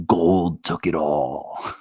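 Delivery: very slow, hushed, conspiratorial half-whisper. Acting out someone who comes in to half-whisper a secret: half-whispering a secret. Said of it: "I gotta whisper you the secret".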